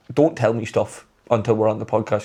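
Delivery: ordinary delivery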